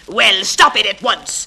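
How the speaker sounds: loud, drawn-out shout. The conductor confronts the passenger again and shouts at him. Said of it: "the conductor shouted".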